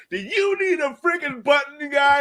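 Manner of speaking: very high, shrill, loud, hard-sell pitchman voice. Retelling the pitchman's ghost sliding under the stall: Billy Mays ghost voice. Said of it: "slides underneath the stall and is like".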